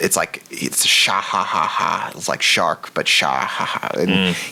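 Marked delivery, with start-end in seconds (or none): 0.9-2.1 put-on comedic cartoon villain laugh, much slower. Praising a voice actor's villain performance, imitating a comedic villain laugh. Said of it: "the sort of comedic laugh that Oda gives his villains".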